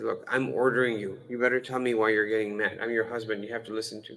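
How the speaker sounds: usual speaking voice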